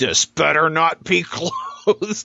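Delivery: slow, rising, forced through clenched teeth. Retelling a five-year-old opening her next gift, imitating speaking through gritted teeth. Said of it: "she just threw gritted teeth".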